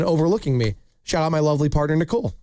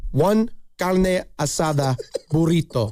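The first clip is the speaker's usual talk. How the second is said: exaggerated, over-the-top Spanish pronunciation. Showing the other speaker how it's said, in over-the-top spanish pronunciation. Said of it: "do it the way you do it over the top".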